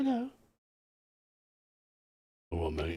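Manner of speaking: creepy warlock voice. Speaker voices a character in one of their funny voices, creepy warlock voice. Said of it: "sometimes is I do it in funny voices".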